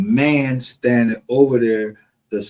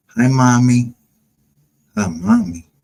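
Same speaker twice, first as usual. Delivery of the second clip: put-on small, childlike, girlish little-girl voice. Mocking someone's father who came up here: imitating someone sounding like a little girl. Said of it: "sound like a little girl".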